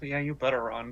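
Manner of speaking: low, soft mumble. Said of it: "he just mumbles".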